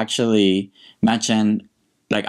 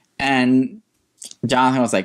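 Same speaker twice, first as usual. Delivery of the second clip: usual speaking voice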